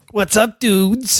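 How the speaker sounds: fake New York man voice. A guest greets the show's hosts on arrival, in a put-on New York guy voice. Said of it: "I'm doing my rug boy".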